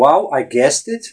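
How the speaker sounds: ordinary delivery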